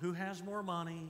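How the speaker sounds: ordinary delivery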